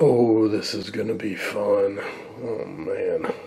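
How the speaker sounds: dry, sarcastic put-on excitement. Pulling tubes out to inspect them, speaking sarcastically. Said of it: "I say that sarcastically".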